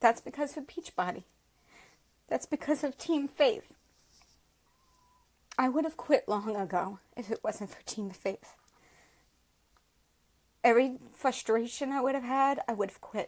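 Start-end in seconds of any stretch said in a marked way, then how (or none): 0.0-8.5 choked up, finding it hard to speak. Speaking to viewers about Team Faith and Beachbody, choked up. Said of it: "this is hard".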